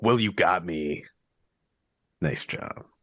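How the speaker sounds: emo tone. Trying out different ways to deliver a line; emo tone. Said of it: "maybe more emo".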